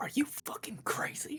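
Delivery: whispered, very quiet, barely above a breath. Retelling how one man whispered to another beside a hole, whispering. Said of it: "whispers to him".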